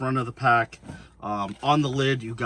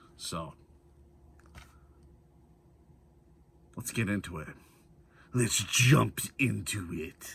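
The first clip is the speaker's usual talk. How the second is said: clumsy, bad put-on Russian accent; 3 dB quieter than usual. Starting to show how to pack the pack, joking: bad Russian accent. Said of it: "That was a shitty fucking Russian accent".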